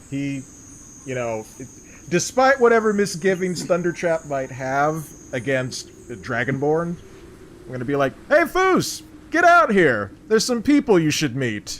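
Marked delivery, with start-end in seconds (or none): 8.3-11.8 very high, loud calling yell. In character, calling someone out to come meet some people, yelling for someone. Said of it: "I'm going to take this opportunity to yell for Foos".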